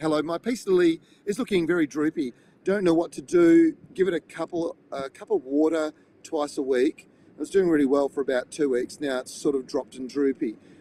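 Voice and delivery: ordinary talk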